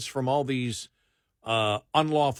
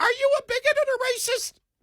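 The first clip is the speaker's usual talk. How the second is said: put-on prepubescent boy voice, higher pitch. Acting out a pimply-faced barista talking race with customers: imitating a kid who hasn't hit puberty. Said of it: "as you can tell by my voice".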